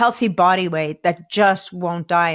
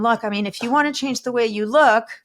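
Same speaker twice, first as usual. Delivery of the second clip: mock heartfelt, very earnest, sincere, well-meaning tone; 3 semitones higher than usual. Retelling what a gym trainer said to a man: imitating earnest advice. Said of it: "this trainer very earnestly says to him".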